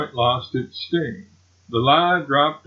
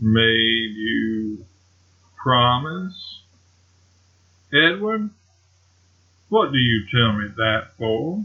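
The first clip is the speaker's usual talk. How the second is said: very slow, drawn-out, deliberate delivery; 3 semitones lower than usual. Reading a story aloud: a wife questions her husband about his promise, very slowly. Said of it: "said very slowly".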